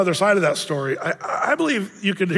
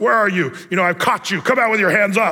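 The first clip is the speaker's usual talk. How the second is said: angry, accusing school-teacher tone. Reading scripture like a teacher mad at you or a cosmic cop: mad school-teacher tone. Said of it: "that tone you hear by a school teacher that's mad at you or a cosmic cop".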